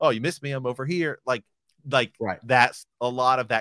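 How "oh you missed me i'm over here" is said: put-on fast-talking New York accent. Imitating a fast-talking New Yorker Spider-Man: imitating Andrew Garfield's Spider-Man, fast-talking New Yorker. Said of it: "he's definitely got the New Yorker, like, fast talking".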